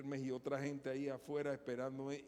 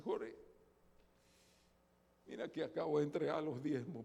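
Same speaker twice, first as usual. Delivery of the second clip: tearful, crying delivery through tears. Retelling what a church member said after giving tithes: imitating someone crying. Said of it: "pero llorando".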